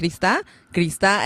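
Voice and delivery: ordinary talk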